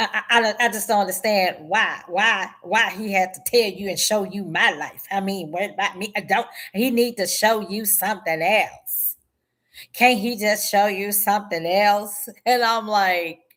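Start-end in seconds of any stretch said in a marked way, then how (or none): 0.0-12.3 stumbling, stammering, put-upon tone. Retelling what her oldest child asked on the phone: imitating her daughter's voice. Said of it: "this is exactly the way she talked".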